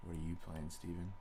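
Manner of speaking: hushed, very quiet, expressionless flat monotone. Rehearsing a line on request, as flat as possible: monotone. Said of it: "In the most monotone form possible".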